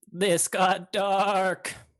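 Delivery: very loud belted sheep voice, dark and stretched. The game master voices Orchestra as he opens his beak, in Orchestra's sheep voice. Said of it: "says in what is clearly a sheep's voice".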